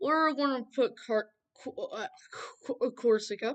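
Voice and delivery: stammering and stumbling over a word. Sorting places into regions aloud, the speaker trips over a name, stuttering. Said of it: "Sorry for my stutter".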